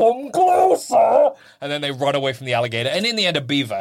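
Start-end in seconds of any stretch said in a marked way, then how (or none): 0.0-1.3 very high, loud, horrible echoing monster voice. Retelling a story where the characters ask an alligator for help, horrible echoey alligator voice. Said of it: "this horrible echoey voice is like".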